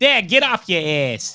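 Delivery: put-on loud, high-pitched New York accent. Imitating the listener talking like a New Yorker on FaceTime: New York accent. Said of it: "yous was talking like a New Yorker".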